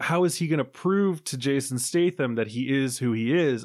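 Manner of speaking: ordinary talk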